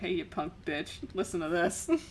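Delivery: mock taunting. Speaker acts out the listener's attitude in this moment; mock taunting. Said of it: "you're just over here like".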